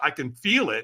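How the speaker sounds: ordinary delivery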